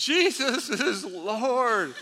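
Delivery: loud, high, full-volume yell with Lord stretched. Retelling how a woman answered when asked to say it, retelling a top-of-lungs yell. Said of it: "she yells at the top of her lungs".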